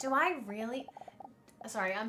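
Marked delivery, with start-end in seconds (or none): 0.0-0.8 put-on Valley Girl accent, slipping in and out. Narrator reads a dinosaur character's thoughts in a waiting room, Valley Girl accent. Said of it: "trying to do like a fucking Valley Girl accent".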